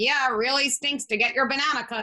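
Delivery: hollow, mocking, sarcastic sympathy. Showing how a parent's words to a kid can fail: mocking tone. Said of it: "I could say the same words and a kid is not going to feel empathized with".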